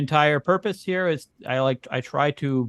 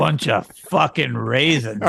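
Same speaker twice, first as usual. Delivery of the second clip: mock disgusted, contemptuous tone; 2 semitones lower than usual. Repeating the other speaker's version of a line to raisins: imitating a disgusted tone. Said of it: "I didn't say it in that tone".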